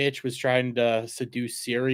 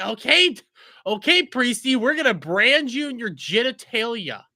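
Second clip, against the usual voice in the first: very high, slow, gleeful, sadistic mock dwarf voice. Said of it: "the dwarf and the gnome are like".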